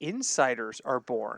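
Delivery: "insiders" set apart, low, slow, ironic air quotes. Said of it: "air quotes".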